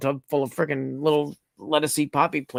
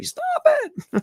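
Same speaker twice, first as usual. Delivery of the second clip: mock, very high-pitched screeching scream. Retelling watching a video of a friend almost stabbing himself: imitating screaming at the TV. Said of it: "I was screaming at the T V".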